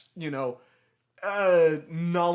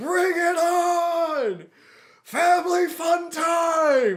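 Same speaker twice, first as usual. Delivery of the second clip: very slow, very high, booming, drawn-out acted scream; 13 semitones higher, 6 dB louder than usual. As a storm starts, Uncle Jeremy yells to the gods; imitating Uncle Jeremy screaming. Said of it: "Screaming that at the top of our lungs".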